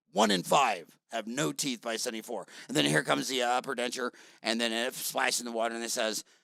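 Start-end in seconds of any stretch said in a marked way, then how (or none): 0.1-2.4 deep narrator voice, pitched lower. Pitching a dental commercial narrated by James Earl Jones: James Earl Jones deep voice. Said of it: "his deep voice says".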